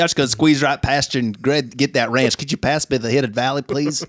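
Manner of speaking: full put-on Southern accent. Answering a question about grabbing the ranch, playing a Southerner. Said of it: "gone full, you know, Southerner".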